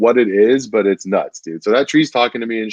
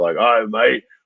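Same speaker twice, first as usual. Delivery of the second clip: put-on grunty old man voice. Describing a voice someone used, imitating an old grunty bar voice. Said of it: "like an old grunty voice that you would hear in like some bar".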